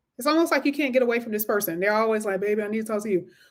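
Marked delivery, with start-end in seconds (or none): 2.4-3.2 put-on, imitated man's voice. Describing someone who keeps trying to talk; put-on man voice. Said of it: "I only say it in the man voice".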